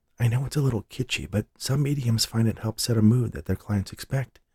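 soft, half-whispered. Reading a story aloud, a character answers someone quietly: half-whispering. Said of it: "she whispered back".

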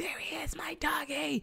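mock very high, cackling, maniacal laughing shriek. Retelling a Hey Arnold scene in a cab at night, retelling maniacal laughing scream. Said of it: "she's like maniacally like laughing, like screaming".

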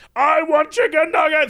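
wild, furious shouting.

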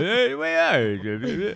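loud swooping comic voice, belted, "are" stretched out. Speaker says he usually ends up sounding like this: Rodney Dangerfield voice. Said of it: "usually I sound like Rodney Dangerfield".

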